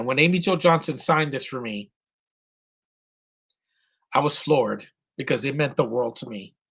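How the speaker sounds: emotional, moved voice, welling up. Telling viewers about an autograph that meant the world to them: getting emotional. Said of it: "I I'm getting emotional".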